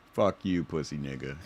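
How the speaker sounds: relaxed, unbothered, laid-back, very low voice. Commenting on an argument, imitating someone's relaxed taunt. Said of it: "somebody is relaxed as fuck when they say".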